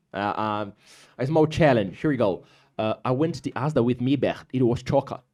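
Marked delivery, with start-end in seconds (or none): 3.0-5.1 Scouse, Liverpool accent. Saying a challenge sentence for the listener to translate into american english, in a scouse accent. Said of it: "the Scouse accent".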